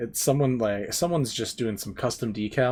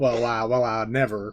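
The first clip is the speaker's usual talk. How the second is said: put-on Southern drawl in a rooster-like voice; 4 dB louder than usual. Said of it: "slips into, like, foghorn leghorn".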